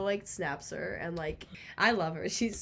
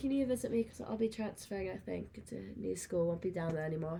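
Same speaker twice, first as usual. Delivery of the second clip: put-on British accent; 5 dB quieter than usual. Speaker quotes a guy's text message to a listener, British accent. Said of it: "I need the British accent for it".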